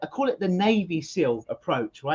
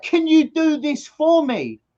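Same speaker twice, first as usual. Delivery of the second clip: put-on drawn-out, high, loud, frustrated small child tantrum; 9 semitones higher, 6 dB louder than usual. Retelling how at five he asked his nan for help, reenacting a childhood tantrum. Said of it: "I threw it down in a tantrum".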